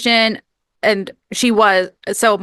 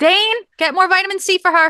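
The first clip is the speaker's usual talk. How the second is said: very high, put-on little old lady accent; 10 semitones higher than usual. Joking with Dane about a sick friend, in a put-on old lady accent. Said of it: "I love your accent comes out too".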